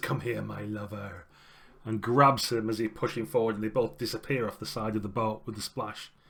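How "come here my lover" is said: hushed half-whispered line. Storyteller voicing a character's line in a game scene, half-whispering. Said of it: "she whispers".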